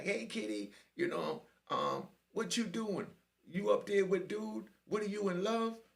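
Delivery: high, put-on woman's voice. Retelling what a woman's voice said, imitating a female voice. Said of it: "I can't even do the female voice".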